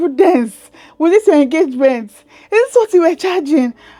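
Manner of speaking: high, loud, pointed shout, put-on. Retelling being questioned about past charging: imitating Sherry shouting. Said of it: "she was shouting".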